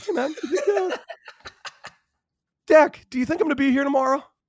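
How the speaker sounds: very high-pitched, cool, easygoing swagger. Retelling a teammate's question before the draft: imitating Gerrit Cole's high-pitched voice. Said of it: "he's got a kind of a interesting high-pitched voice".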